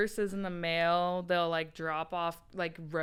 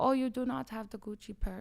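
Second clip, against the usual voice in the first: very bad put-on Persian accent, high-pitched; 5 semitones higher than usual. Mocking how certain rich people talk to others; bad persian accent. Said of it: "that was the worst Persian accent".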